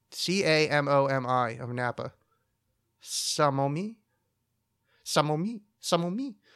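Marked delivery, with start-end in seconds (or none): 3.1-6.4 slow, bad, fake French accent. Pronouncing a place's name the Italian way, in a shitty French accent. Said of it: "do a shitty French accent".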